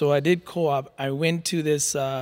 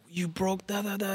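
mock-angry scolding voice, much higher pitched; 5 semitones higher, 6 dB quieter than usual. Recalling his mom scolding him as a curious kid: imitating angry mom. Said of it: "she was pissed off at me".

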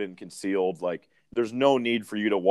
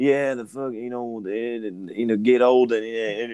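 rambling, meandering celebrity voice; 2 semitones higher than usual. Mocking how Matthew McConaughey rambles: Matthew McConaughey impression. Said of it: "Matthew McConaughey, he's just got".

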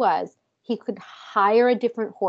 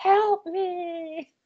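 mock very high, shrill shout, stretching "me"; 9 semitones higher, 4 dB quieter than usual. Retelling a story where a kidnapped character shouts from a window: imitating a shout for help. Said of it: "slams herself up against the window and shouts".

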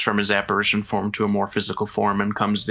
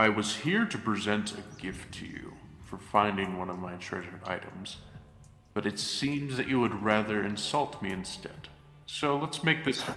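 very deep, exclaimed, declaiming voice; 10 dB quieter than usual. Game narrator voicing Helios addressing two characters, very deep monotone Helios voice. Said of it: "exclaims in a very deep monotonal voice".

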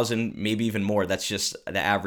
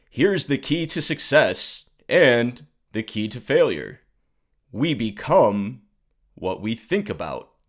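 slow, raised, booming, bad put-on voice; 3 semitones higher, 5 dB louder than usual. Quoting a motivational audio tape in its author's voice: Earl Nightingale impression. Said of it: "let me do my impression here".

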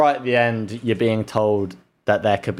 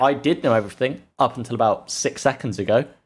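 usual speaking voice

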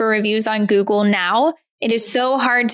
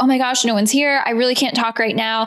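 mock-frantic, flustered female voice. Retelling meeting an acupuncturist while going door to door, imitating a frantic woman. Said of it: "came up from the back a little bit frantic".

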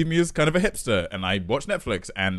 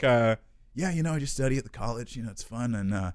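put-on American accent, quieter and slower; 4 dB quieter than usual. Retelling a 15-minute ride, the speaker acts out their early small talk in a put-on American accent. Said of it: "my American voice".

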